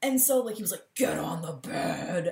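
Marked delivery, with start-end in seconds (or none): 0.9-2.3 low, slow, rough tough-guy wrestler voice. Retelling what he said to her in the bedroom, in a WWE wrestler voice. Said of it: "talking in a voice like this, like a WWE wrestler".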